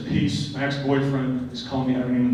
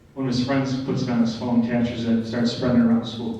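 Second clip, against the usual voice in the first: ordinary delivery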